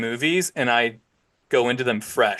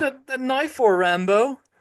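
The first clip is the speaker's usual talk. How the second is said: very high-pitched, put-on Irish brogue; 11 semitones higher than usual. Quoting two brothers' banter, the speaker puts on an irish accent. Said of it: "it's a pretty good Irish accent".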